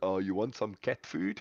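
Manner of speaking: put-on South African accent. Recalling an old alien movie filmed in South Africa; South African accent. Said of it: "that old movie that was filmed in South Africa".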